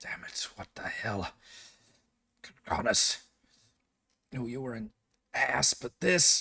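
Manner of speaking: whispered, breathy muttering under the breath. Narrating the injured Cudgel coming to her senses: Cudgel muttering under breath. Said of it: "you can hear her muttering under her breath".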